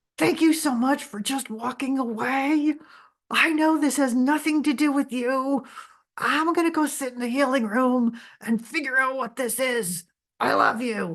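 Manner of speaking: forced through clenched teeth. Speaker retells opening the bedroom door and speaking: retelling words through gritted teeth. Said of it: "through gritted teeth".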